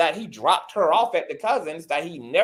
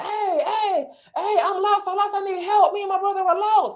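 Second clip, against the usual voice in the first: acted, very high, panicked, desperate screaming. Retelling a story of a woman lost in the woods calling to strangers, imitating her screaming. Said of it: "So she starts screaming".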